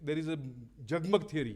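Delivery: ordinary talk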